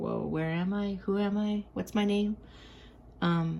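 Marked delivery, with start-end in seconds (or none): none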